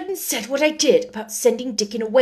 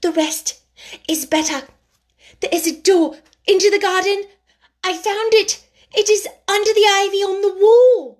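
very high, solemnly thrilled and excited delivery; 9 semitones higher, 4 dB louder than usual. She goes on telling him the rest of her news, with solemn excitement. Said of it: "almost pale with solemn excitement".

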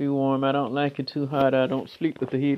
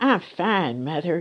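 put-on small light young girl's voice; 4 semitones higher than usual. Retelling answering her mother as a little girl by the heater; little light child's voice. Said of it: "you're little and have that little light voice".

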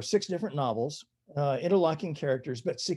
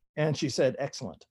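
ordinary talk, nothing marked

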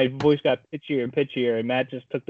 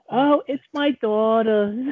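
put-on high, slow crazy old lady voice. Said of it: "That's the voice".

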